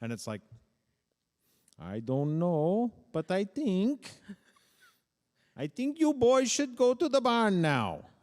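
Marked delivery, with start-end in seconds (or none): 1.8-8.0 put-on Dutch accent, very high-pitched and loud. Speaker imitates how his peers' dutch immigrant parents spoke: dutch immigrant parent accent. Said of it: "Dutch immigrant parent".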